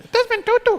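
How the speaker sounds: very high, small, squeaky chipmunk voice. Imitating a visiting speaker's voice: Desmond Tutu impression, very high-pitched. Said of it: "sounds like a chipmunk on acid".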